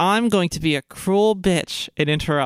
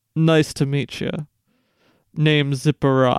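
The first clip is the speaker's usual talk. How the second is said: put-on older goth man character voice, lower; 4 semitones lower than usual. Voicing the older goth father-in-law greeting a player: voicing an older goth man. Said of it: "And he's like".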